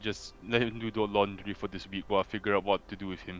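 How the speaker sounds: low, hushed, half-whispered stage whisper. Acting out him half-whispering to the assistant, half-whispering. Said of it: "Then then he whispers to the assistant".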